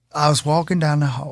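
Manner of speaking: put-on Southern accent. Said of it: "Why does he talk like that?".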